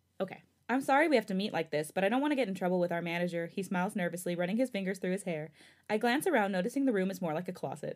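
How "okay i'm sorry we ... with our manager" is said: plain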